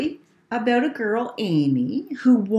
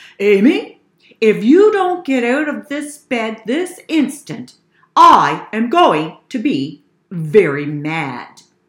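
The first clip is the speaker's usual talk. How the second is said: loud, very stern, angry father voice, drawn out; 7 dB louder than usual. A father calls up to his sleeping daughter, in his sternest father voice. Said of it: "said in his sternest father voice".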